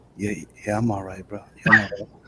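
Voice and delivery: mock "under something" phone voice. Acting out a phone call where the friend seems under something: imitating a friend sounding like he's under something. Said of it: "you sound like you under something".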